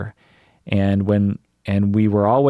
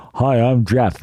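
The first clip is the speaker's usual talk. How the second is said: overbite voice, top teeth pushed over lower lip; 3 semitones higher than usual. Showing how an imaginary friend with an overbite talked: Jeff overbite voice. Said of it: "I would put my teeth over".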